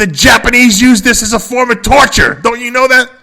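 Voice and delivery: very high, loud, furious screaming rant. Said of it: "he's screaming at my aunt".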